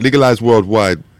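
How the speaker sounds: loud put-on Jamaican accent. Friends joking about legalized weed, slipping into a Jamaican accent. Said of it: "We all went into the Jamaica accent".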